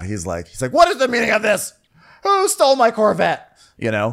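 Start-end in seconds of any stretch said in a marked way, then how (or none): 0.7-3.4 high-pitched angry outburst. Retelling a scene, voicing Corliss as a real angry dad. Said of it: "Corliss is, like, real angry dad".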